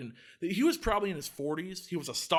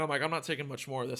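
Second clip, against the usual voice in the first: usual speaking voice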